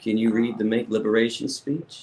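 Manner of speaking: usual speaking voice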